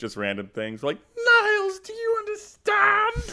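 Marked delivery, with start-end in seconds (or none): 1.2-3.3 small, high, drawn-out yell. Showing how friends yell random lines: yelling as Kelsey Grammer. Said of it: "yell a little bit as Kelsey Grammer".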